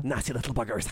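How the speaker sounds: put-on Hollywood-style Scottish accent. Repeating a Scottish character's line, mimic a Hollywood-style Scottish accent. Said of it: "Hollywood's version of a Scottish person".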